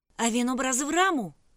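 very loud, shrill, full-throated yell. Ragguram shouts at Farukh in front of a crowd. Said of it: "крикнув Рагурам".

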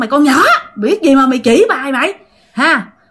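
sharp, angry scolding tone. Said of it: "Chửi tiếp các bạn".

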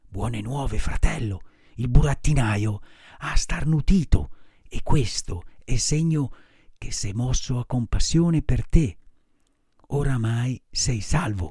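softly whispered, hushed. Arlecchino leaning toward Pinocchio to tell him news, whispered softly. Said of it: "gli bisbigliò sottovoce".

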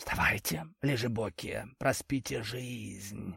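hissed, very hushed. A friend wakes the sleepers from the kitchen, rattling plates, hissed. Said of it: "прошипел он".

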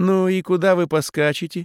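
teasing, amused tone. The aunt questions the narrator and his girl, mockingly asking. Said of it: "насмешливо поинтересовалась тетушка".

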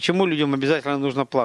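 plain reading voice

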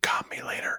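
quiet whispered aside. Voicing a character flirting in passing: mouthed under breath. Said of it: "mouth under his breath".

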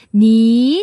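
soft, gentle upward tune through "nin". Teaching the respectful word for you, gently rising tone on nin. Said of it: "이성으로 부드럽게 올리는".

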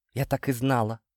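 ordinary delivery

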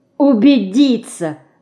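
bitter, crying-out delivery. Dinka answers the remark about Alina, a bitter exclamation. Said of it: "с горечью воскликнула Динка".

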